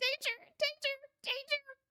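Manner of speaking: shrill, very loud, high shrieking cry. Put on the spot for an impersonation: loud shrieking Vincent Price impression. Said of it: "it's probably just a shriek very loudly".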